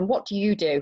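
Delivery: mock intimidating, menacing tone. Recalling a senior woman at an event questioning the speaker, imitating an intimidating tone. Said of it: "in a very intimidating tone".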